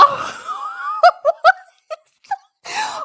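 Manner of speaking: giggling throughout, very slow and very high-pitched. Reacting to a photo on screen, laughing while talking. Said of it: "where you can't stop laughing".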